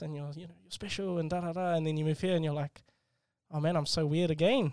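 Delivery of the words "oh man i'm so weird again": ordinary delivery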